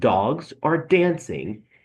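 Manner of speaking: heavy stressed hits on dogs and dancing. Explaining stressed and unstressed beats in poetry, stress on dogs and dancing. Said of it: "if I emphasize the words dog, dance, you have a stress beat, an unstressed beat".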